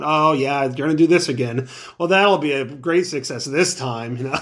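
mocking, bored-stiff, flat monotone drone. Speaker mimics how a man mocks people, imitating a bored monotone. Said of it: "he's real sort of monotone, like bored".

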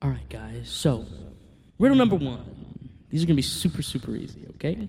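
grave, businesslike tone. Telling a story, the character stands up and addresses the guys in a more serious voice. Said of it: "he starts to talk in a bit more serious voice".

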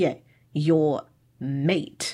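mock sarcastic tone. Retelling how a man mocked a woman's word choice, mocking his sarcasm. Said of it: "he gets really sarcastic".

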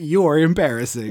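plain

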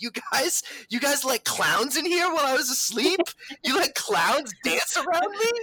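acted-out scream. Retelling what was yelled at the group on waking, retelling own screaming. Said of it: "I was just like screaming".

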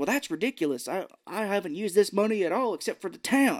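slight country drawl. Recapping a movie scene, the speaker does Matthew Payton's country drawl. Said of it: "kind of a country drawl a little bit".

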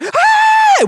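high, loud mock scream.

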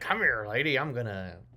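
pirate character voice. Describing how pirates used to chase the ladies around: pirate chasing the ladies. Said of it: "the pirates used to chase the ladies around".

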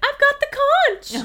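shrill, very high, very loud yell. Describing Piggy holding the conch while everyone ignores him; imitating Piggy yelling. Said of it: "and he like yells like".

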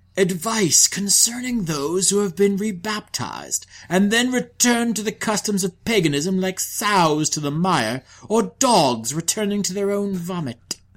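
churchly archbishop voice. Quoting the Archbishop of Rouen's letter to the Pope, in an Archbishop voice. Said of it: "I love the Archbishop voice".

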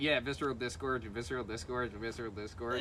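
ordinary talk, nothing marked

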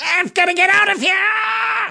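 very high panicky goblin creature squeal. Voicing a trapped goblin scrabbling at the wall: panicking goblin. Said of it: "He's like".

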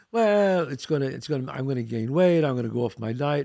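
plain

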